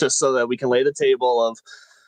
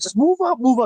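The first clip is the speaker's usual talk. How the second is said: put-on high, loud sideline-style yell; 13 semitones higher than usual. Retelling yelling from the side at a stepson's soccer game: imitating yelling from the sideline. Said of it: "So we're yelling from the side".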